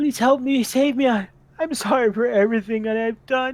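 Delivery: high, loud, desperate, tearful crying voice. Speaker recounting a woman waking after being stabilized, imitating her crying plea. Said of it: "And she's like crying".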